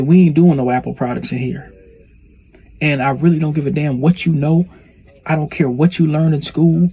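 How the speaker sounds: acted-out blunt, forceful, laying-down-the-law tone. Retelling the senior engineer's first-day speech: imitating someone laying down the law. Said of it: "He's just laying the law down".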